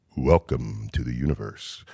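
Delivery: very low, soft, from-the-sky planetarium voice. Asked about their voice, demonstrating the voice they put on: a planetarium voice. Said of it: "when I put on a voice".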